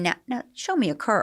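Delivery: put-on Southern lady accent. Retelling what a hostess said on air: imitating a Southern hostess. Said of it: "she talked like this".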